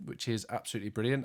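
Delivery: quick delivery, dripping with heavy sarcasm.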